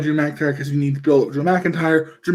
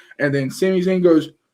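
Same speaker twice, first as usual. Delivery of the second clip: ordinary delivery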